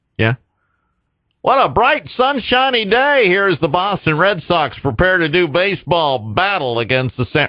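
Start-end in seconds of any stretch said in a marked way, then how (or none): 1.4-7.5 pitched-up sportscaster play-by-play patter. After asking whether it sounds like one, he tries out a sportscaster voice. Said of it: "does that sound like a sportcaster voice?".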